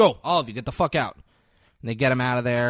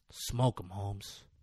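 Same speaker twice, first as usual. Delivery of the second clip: put-on cool, unruffled, super calm, quiet delivery; 4 semitones lower, 11 dB quieter than usual. Retelling a movie scene, quoting Tuco: imitating Tuco speaking calmly. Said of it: "Tuco is super calm".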